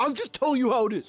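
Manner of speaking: high, rushed, frantic, freaking-out outburst. Retelling a man who was telling him he needed surgery, mimicking him freaking out. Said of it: "And he's like freaking out".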